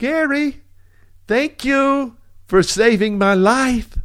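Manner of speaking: high, little, high-pitched woman's voice. Retelling what a woman said to him on the phone, imitating Belinda's high voice. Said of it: "she has a high voice".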